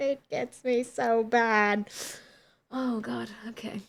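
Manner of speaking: tearful voice, crying while talking. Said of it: "Why are you crying?".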